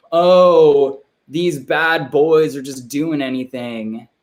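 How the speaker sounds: slow, limp, ineffectual mocking voice with long "oh". Criticizing Democrats, the speaker does an impression of Democrats. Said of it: "That was not a great impression".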